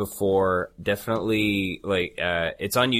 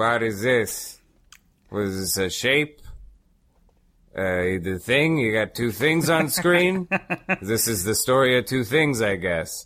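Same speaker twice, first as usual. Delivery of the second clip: put-on very heavy, thick Brooklyn accent laid on strong; 2 semitones higher than usual. You act out his sudden commentary on something serious and cinematic: Brooks impression, very heavy Brooklyn accent. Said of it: "in his very heavy Brooklyn accent".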